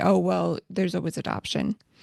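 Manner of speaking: plain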